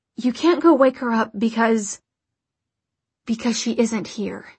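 ordinary delivery

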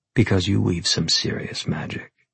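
ordinary delivery

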